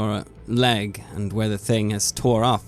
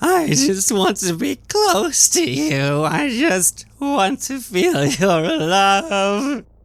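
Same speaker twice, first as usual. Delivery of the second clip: very high, swooping, wailing cry; 11 semitones higher, 4 dB louder than usual. Narrator describing a thrashing thing, voicing a voice from the back crying out. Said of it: "you hear this voice from the back crying out".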